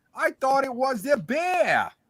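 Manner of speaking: loud, high-pitched New York accent impression. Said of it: "read the comment in your best everything Star Wars impression".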